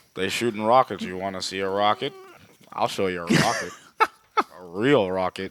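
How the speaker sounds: flirty, put-on voice of a big ape. Retelling a scene, the speaker gives the ape's lines in a King Kong voice. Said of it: "That that King Kong's voice".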